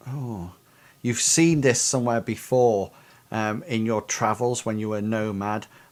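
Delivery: ordinary delivery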